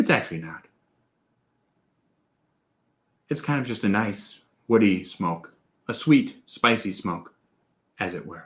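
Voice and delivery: calm and easy. Switching into calm mode while reviewing a whiskey. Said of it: "We're gonna go into calm mode now".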